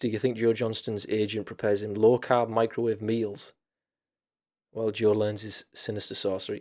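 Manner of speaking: normal talking voice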